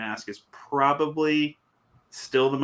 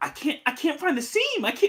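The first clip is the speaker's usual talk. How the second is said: put-on shrieking scream, very high-pitched; 14 semitones higher than usual. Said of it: "screaming when her friend was trying to help".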